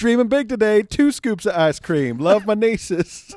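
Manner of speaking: put-on Southern drawl, very high-pitched and very loud. Reading out a friend's joke tweets in a Southern accent.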